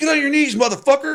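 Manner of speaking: shrill, very high, loud yelling. Retelling what the other officer yelled across the car: imitating yelling. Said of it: "We're yelling at each other across the car".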